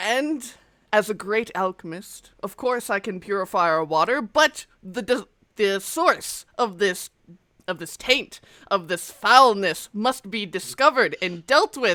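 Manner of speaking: loud booming voice. Voicing a levitating sage who welcomes everyone to the town meeting: booming voice. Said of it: "this booming voice".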